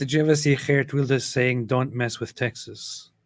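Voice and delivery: normal talking voice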